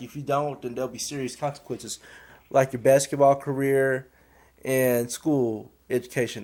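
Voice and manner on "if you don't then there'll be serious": usual speaking voice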